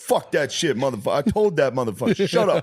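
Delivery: high-pitched, ranting New York street voice. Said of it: "The ones that are just scream".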